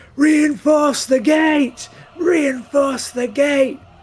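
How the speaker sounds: shrill, very high, drawn-out battle yelling. Voicing a dwarf commander as a boulder hits the gate: yelling. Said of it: "just starts yelling".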